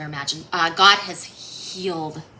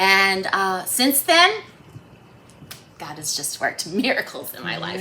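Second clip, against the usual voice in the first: voice catching, choking up, near tears; 2 semitones higher, 3 dB louder than usual. Telling how life changed after getting sober, choking up. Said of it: "Sorry, I'm about to cry".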